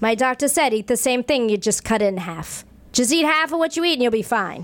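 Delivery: put-on New York accent. Quoting their late mother, in her great new york accent. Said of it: "she had this great New York accent".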